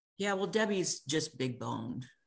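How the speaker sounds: plain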